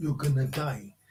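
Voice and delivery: ordinary talk, nothing marked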